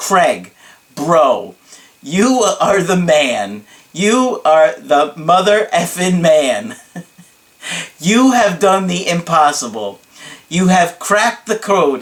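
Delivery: big, slow, theatrical hype delivery. Retelling a client's praise on a Skype call: imitating a client's dramatic voice. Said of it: "he's always really dramatic when he says my name".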